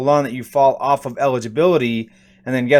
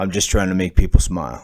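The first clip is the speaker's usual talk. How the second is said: low, deep celebrity-style voice; 6 semitones lower than usual. Quoting what Shaquille said when asked about details: Shaq voice impression. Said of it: "I'm going to do my best Shaq voice".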